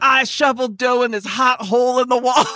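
mock high-pitched hollered shouting. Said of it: "levels of shouting about it".

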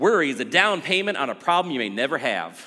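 hesitant, tentative put-on Southern accent. Quoting a saying heard from a Southern pastor, in an attempted Southern accent. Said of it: "I don't know if I can do a good Southern accent".

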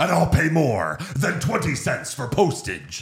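high, swooping put-on voice. Quoting a Kingpin line as an impression: Vincent D'Onofrio impression. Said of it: "I get excited when I could do an impression".

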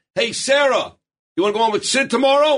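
put-on high, loud screamed-out call. Retelling how he called out to Sarah: imitating someone screaming out. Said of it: "he screams out".

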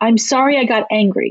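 usual speaking voice

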